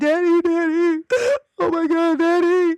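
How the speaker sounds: mock very high, blubbering, drawn-out boo-hoo sobbing wail. Retelling coming crying into her parents' room: imitating her own childhood crying. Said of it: "And I went in and just cried".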